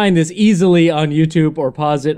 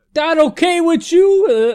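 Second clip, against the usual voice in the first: put-on Bronx accent, much higher pitched; 12 semitones higher than usual. Discussing how Raphael's voices have sounded, doing Raphael's Bronx accent. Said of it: "he's got a Bronx accent".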